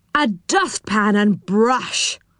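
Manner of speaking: disgusted, scornful exclamation full of disgust. Narrator reading a character's line in a story, disgusted. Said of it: "said Moonface in disgust".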